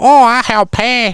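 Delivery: very slow, very high fake Chinese accent. Retelling what he said after causing a crash on a highway: put-on foreign accent. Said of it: "all my foreign accent people sound Chinese".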